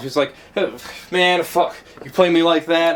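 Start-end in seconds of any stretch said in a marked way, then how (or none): 1.1-3.0 put-on angry ranting man's voice, higher. Retelling how a stranger on a bus went off at the driver: imitating a man going off. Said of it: "he's going on and off".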